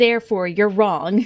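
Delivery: hammy, silly, overblown theatrical dramatic delivery. Speaker shows how they read it themselves; silly dramatic voice. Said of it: "in a silly dramatic voice".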